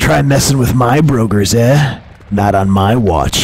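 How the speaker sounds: proud, boastful, proclaiming tone. A narrator reads the ogre's line after knocking a foe into a tree: proudly proclaiming. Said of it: "the Ogre replied. / that big green guy?" / the Ogre replied".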